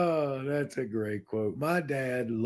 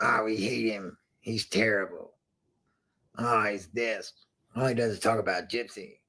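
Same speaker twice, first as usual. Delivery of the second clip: mocking, put-on troll voice; 4 semitones lower than usual. Speaker imitates commenters who hate him: mocking troll voice. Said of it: "That's my best voice for haters".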